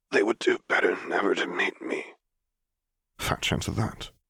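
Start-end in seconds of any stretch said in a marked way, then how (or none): 0.1-2.0 frail, rasping character voice. Reading a story, Vader answers the other man's remark about grandchildren, in a frail rasp. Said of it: "The voice, a frail rasp, the ruin of the pleasant tenor in the recording the Solo twins had shown him, labored to be heard at all".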